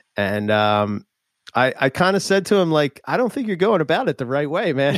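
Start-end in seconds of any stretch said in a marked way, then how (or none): 3.0-5.0 sarcastic, swooping, pitched-up sing-song delivery. Retelling what was said to a job seeker with a knife: retelling own sarcastic remark. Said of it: "that [name] sarcasm".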